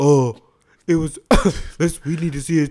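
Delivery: loud put-on dim-witted voice. Showing how one talks about dumb people, in a dumb-person voice. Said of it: "here's what I do when I'm talking about dumb people".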